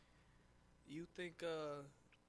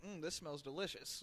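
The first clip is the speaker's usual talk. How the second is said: normal talking voice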